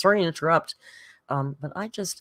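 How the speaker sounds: plain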